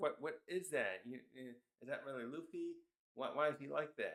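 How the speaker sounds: ordinary delivery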